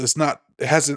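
stumbling over words. Explaining what today's episode is, stuttering. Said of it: "'cause I'm stuttering".

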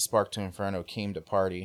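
ordinary talk, nothing marked

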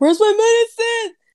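very high, loud, frantic, panicked outburst. Retelling a phone call where the speaker lost it: imitating own freak-out. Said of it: "flipped out".

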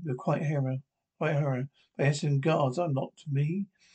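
ordinary delivery

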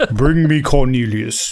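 deep villain voice, as if through a mask. Joking about a line you never heard in Star Wars, in a Darth Vader impression. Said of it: "That's my Darth Vader impression".

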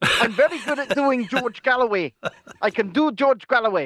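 put-on accent drifting into an Indian accent. Told he only does Russian accents, he insists on a George Galloway impression sounding Indian. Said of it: "You sounded a bit Indian there rather than George Galloway-ish".

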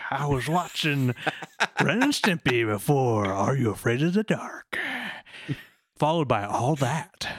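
put-on old man voice. Reminiscing about watching SNICK shows, in an old man voice. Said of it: "That is a great old man voice".

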